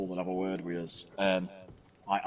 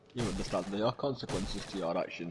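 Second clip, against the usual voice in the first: plain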